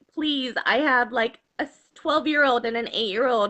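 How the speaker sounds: ordinary delivery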